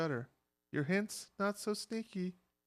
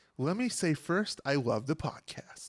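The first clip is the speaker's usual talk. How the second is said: mock radio announcer voice; 3 semitones lower, 3 dB louder than usual. Reading a listener email aloud as a dedication: Casey Kasem voice. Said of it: "I should do my Casey Kasem dedication".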